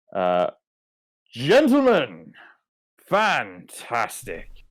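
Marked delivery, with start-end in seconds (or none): 1.3-4.5 animated, high, swooping delivery. Their captain calls from the throne room doors: Luther Gandolin's booming voice. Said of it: "a familiar booming voice".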